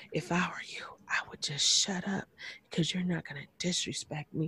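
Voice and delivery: barely audible, very soft, breathy whisper. Retelling a threat made while standing over someone: imitating someone whispering. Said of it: "starts whispering".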